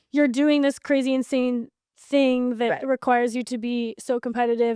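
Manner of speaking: usual speaking voice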